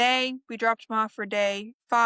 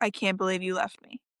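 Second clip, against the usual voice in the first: mock crying, lower; 4 semitones lower, 3 dB quieter than usual. Retelling how he comes running over crying: imitating someone crying. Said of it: "he comes running over crying, like".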